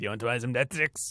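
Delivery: put-on gross-sounding voice. Quoting a dealer offering to sell death sticks: imitating a gross-voiced dealer. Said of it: "He's got a gross voice".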